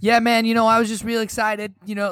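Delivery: put-on high voice like a young teenager. Act out a clip of the younger player after his game-winning shot, 15-year-old Michael Jordan voice. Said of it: "Like he's like 15 year old voice".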